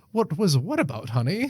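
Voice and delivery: feigned innocent voice. Acting out a husband denying cruel texts: mock innocent husband voice. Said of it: "They're like".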